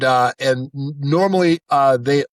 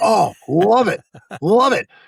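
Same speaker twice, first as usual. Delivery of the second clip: put-on excited voice, higher; 7 semitones higher than usual. Retelling a recording session, imitating an excited director. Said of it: "the director got real excited about that take".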